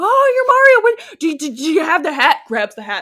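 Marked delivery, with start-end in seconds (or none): 0.0-2.4 very loud, high, gushing starstruck squeal. Acting out a scene where Toad meets Mario: excited Toad fan. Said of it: "fan toading all over the place".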